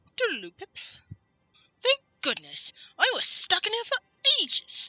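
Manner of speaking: put-on posh English accent, sing-song, swooping high. Doing Cogsworth's lines in a character voice: Cogsworth, proper English accent. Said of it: "I'm more going for proper English".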